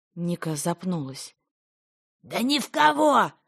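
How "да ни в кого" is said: very high, loud, sustained drawn-out shout. A man answers a woman's hesitant question, shouting. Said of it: "закричал Илья".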